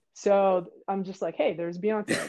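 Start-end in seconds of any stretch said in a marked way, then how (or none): 1.3-2.3 put-on, super calm voice. Retelling own remark to teammates, imitating own super calm voice. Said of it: "I'm, like, super calm".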